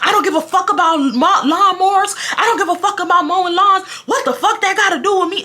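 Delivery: acted high-pitched all-out screaming rant. Retelling a neighbor's argument over a lawn patch: imitating someone screaming. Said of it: "She starts screaming".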